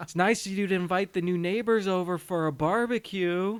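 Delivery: eerie, ghostly, haunted-house spooky voice. Retelling a dream scene where a wife calls out: imitating a spooky voice. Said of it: "all spooky".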